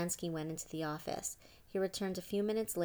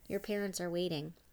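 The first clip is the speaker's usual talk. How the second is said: ordinary delivery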